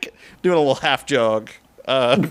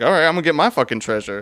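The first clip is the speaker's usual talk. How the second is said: eager, excited, rushed character voice, words tumbling out. Voicing an eager character rushing toward a door for treasure: excited character voice. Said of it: "he's excitedly like".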